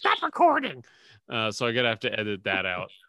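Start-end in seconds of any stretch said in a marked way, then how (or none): 0.0-0.8 shrill, very high shout. The speaker retells what his wife shouted while he was recording: retelling a yell. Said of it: "my wife started yelling".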